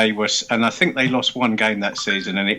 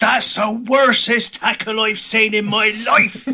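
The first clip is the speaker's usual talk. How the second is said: mock very high, all-out top-of-voice scream; 13 semitones higher, 4 dB louder than usual. Recounting a bloke who stood up in front of the speaker: retelling a scream. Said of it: "screamed at the top of his voice".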